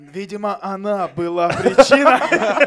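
slow, loud, mock-solemn documentary voice.

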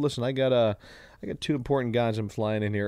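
ordinary delivery

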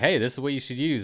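plain

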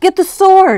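gasped out, very high and very loud. A boy facing a growing witch calls to Mommy; gasped. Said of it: "I gasped".

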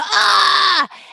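screaming man's voice.

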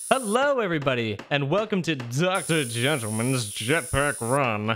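obnoxious mustached gentleman voice. Welcoming everybody to a game, obnoxious mustached gentleman voice. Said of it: "make my voice so obnoxious that you can practically hear the mustache".

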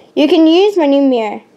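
plain

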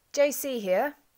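abrupt, brutally prompt. A caller answers the narrator on the phone, curt, with brutal promptitude. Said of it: "rapped out with brutal promptitude".

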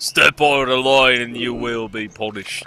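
hammy, overdone fake English accent. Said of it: "doing a really bad English accent".

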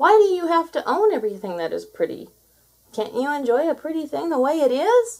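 loud, high shouting. Trapper to Mutsok, who raged on the beach: shouted. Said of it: "shouted Trapper".

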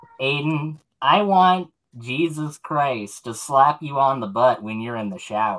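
lightly effeminate delivery. Quoting something P-Town actually said to Aiden, imitating P-Town, slightly effeminate. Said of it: "just go for slightly effeminate".

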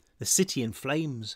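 ordinary delivery

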